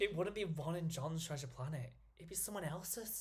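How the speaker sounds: put-on soft Scouse accent slipping in. Repeating his own odd delivery of a line: slipping into Scouse accent. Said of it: "I sounded like I went scouse".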